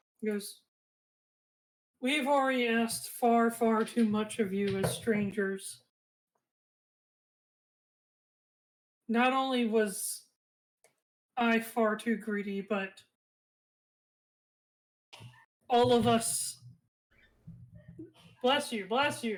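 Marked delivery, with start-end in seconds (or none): 2.0-16.6 very solemn, grave voice. Voicing the elder who speaks to the strangers: very solemn voice. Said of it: "in a very, very solemn voice".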